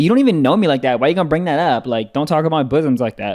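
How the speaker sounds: ordinary delivery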